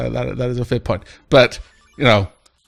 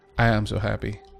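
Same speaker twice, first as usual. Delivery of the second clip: dry, sardonic, tongue-in-cheek sarcasm; 3 semitones lower, 9 dB quieter than usual. Reacting to being allowed to try many different things: sarcastic. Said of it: "Also sarcastic".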